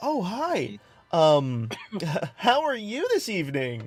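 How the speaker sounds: perked-up tone. Narrator voices a woman who runs up to the only one awake, perky. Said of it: "she looks like she perks up a bit".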